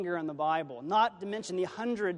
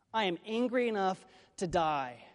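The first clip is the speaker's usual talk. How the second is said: ordinary delivery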